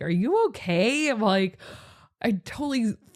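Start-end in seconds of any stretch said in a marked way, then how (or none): 0.0-1.1 words spoken through laughter. Retelling a friend asking if all is well: imitating a friend laughing while asking. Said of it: "she was, like, laughing".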